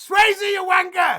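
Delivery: shrill, high, loud, jeering shout. Retelling how Richie shouted at the ceremony from the window: imitating Richie shouting. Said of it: "Richie shouts out".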